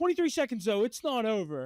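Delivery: put-on smug, cocky tone. Retelling a sports fan gloating before a comeback: imitating a cocky fan. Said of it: "saying it like a cocky asshole".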